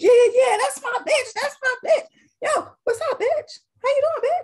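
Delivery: very high, affectionate, friendly banter tone. Speaker giving an example to a client: imitating homegirls. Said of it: "And then you have a dude".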